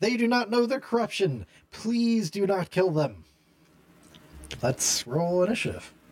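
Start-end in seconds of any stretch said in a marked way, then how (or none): 0.0-3.2 high-pitched yelling. Voicing Princess Ursula as corrupted guards close in around her: yelling out. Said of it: "she yells out".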